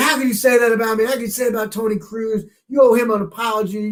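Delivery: furious ranting. Retelling a man screaming in the speaker's face about the speaker's column, retelling an angry scream. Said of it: "He's screaming".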